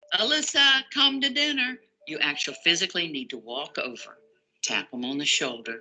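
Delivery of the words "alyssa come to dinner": hollering, much higher, slower. Showing what parents often do, hollering from the kitchen to a child. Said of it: "Often we like to holler from the kitchen".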